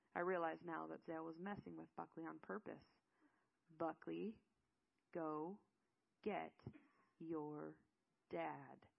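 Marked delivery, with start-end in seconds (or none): 3.8-8.8 very slow, halting, condescending delivery. Reading a character repeating his words to another, slow and condescending. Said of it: "Zale repeated slowly, as if Buckley was too stupid to understand".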